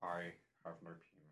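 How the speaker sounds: very low, very quiet, hushed murmur. Doing a run of impressions for listeners, in an Alan Rickman in Dogma impression. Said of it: "my impression of Alan Rickman in Dogma".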